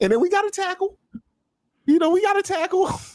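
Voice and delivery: very high, unsure, unconfident voice. Listing the players on a team, unconfident, voice all high. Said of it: "You're no confidence when you say it like that. voice all high".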